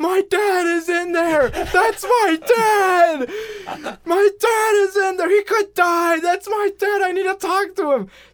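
very high-pitched, very loud screaming. Recapping a scene where a woman screams at a detective: acted-out screaming at a detective. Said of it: "she just like starts screaming at the detective".

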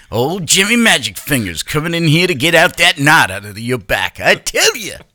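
goofy, high animated cartoon character voice. Imagining himself as a world-famous masseuse, Jimmy Magic Fingers: Simpsons character voice. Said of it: "Why did you just turn it into a Simpsons character?".

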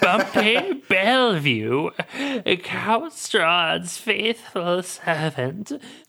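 put-on wheezy servant voice. Voicing Bumpy after being asked who he is, wheezy Bumpy voice. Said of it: "He wheezes with a little cough".

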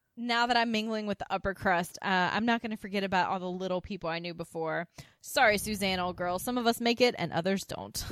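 ordinary talk

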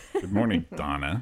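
mocking deep, hesitant tone. Imitating another speaker's greeting to a caller: imitating a deep, hesitant greeting. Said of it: "Did you like that tone?".

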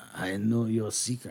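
low, confiding character voice. Voicing the NPC as he raises an eyebrow at a player: voicing Spoon Noir. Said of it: "he gives you the eyebrow, and he says".

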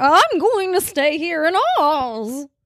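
high, slow character voice. Discussing the ending of the Oz story, doing a Billina the chicken impression. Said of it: "That was a pretty good impression".

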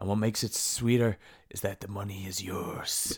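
velvety, silky smooth announcer promo voice. Quoting a wrestling promo line: imitating a silky smooth voice. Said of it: "And his voice is so silky smooth".

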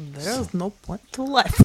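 strong, put-on Russian accent. Giving a requested preview of the person's voice: [name]'s Russian accent. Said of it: "could you give us a little preview of that?".

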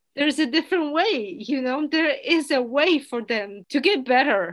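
tearful, choked-up voice welling with tears. Mid-conversation, the speaker starts tearing up. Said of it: "and now I'm tearing up".

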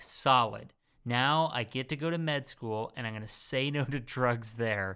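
ordinary talk

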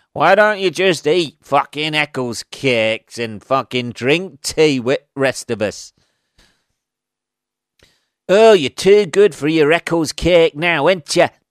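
terrible, put-on northern English accent. Playing the film's antagonist who taunts the main character, in a bad northern accent. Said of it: "the worst northern accent you've ever heard".

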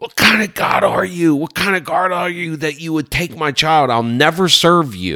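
shrill, very high, blood-curdling scream, acted. Retelling screaming up at the sky after the crib death: retelling a blood-curdling scream. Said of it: "at the top of my lungs, blood curdling".

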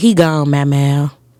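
put-on soft, gentle voice. Retelling a voice heard while looking at the clouds: imitating the sweetest, softest voice. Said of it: "I literally hear the sweetest, softest voice".

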